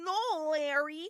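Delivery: attempted, put-on Midwestern accent. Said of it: "a sort of Midwestern thing that came out".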